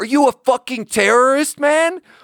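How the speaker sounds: put-on very high, loud drunken man scream. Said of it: "he screams at me".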